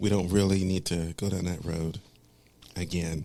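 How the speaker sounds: hushed whisper. A show host talking with a co-host about an earlier topic, whispering. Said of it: "Why are we whispering like".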